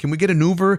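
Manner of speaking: high, teary, whiny crying. Walking hungover to the hotel, a friend wants an Uber; imitating Pure Chill crying. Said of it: "starts crying".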